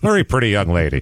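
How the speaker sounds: put-on vintage, old-time broadcast newscaster voice. Describing a young woman in a photo, joking: old newscaster voice. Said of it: "to sound like an old newscaster".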